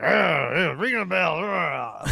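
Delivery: very slow, creaky, rough dragged-out drawl. Showing how the comedian said it: imitating Norm Macdonald. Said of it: "where he's like".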